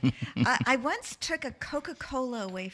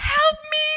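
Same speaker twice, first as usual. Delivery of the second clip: shrill, loud, all-out, desperate scream; 10 dB louder than usual. Retelling a tantrum screamed out of an open window: imitating screaming. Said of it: "Jamie was screaming".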